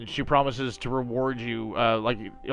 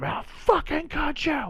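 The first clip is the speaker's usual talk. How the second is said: screaming, much higher pitch. Narrating a character beating a mercenary and screaming at him. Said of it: "she just keeps screaming at him".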